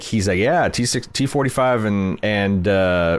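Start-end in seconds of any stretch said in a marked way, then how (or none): 0.4-1.8 slick, casual, smooth sales-pitch delivery. Retelling a scene where a guy talks about armor: imitating a smooth-talking guy. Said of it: "this guy's so smooth".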